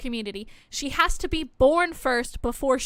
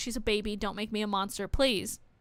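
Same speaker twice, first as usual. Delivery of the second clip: put-on crying, tearful voice, lower and quieter; 4 semitones lower, 6 dB quieter than usual. Retelling a scene where a character starts to cry: imitating someone crying and pleading. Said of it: "She starts to cry".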